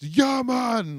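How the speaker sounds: put-on strong Jamaican accent, very high and very loud. Retelling a phone order from a Jamaican caller, imitating a Jamaican accent. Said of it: "like seriously Jamaican".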